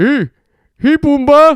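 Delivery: very high-pitched, loud Canadian accent. Imagining a Canadian Lion King, Simba greets Pumbaa, Simba with a Canadian accent. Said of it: "Simba with a Canadian accent".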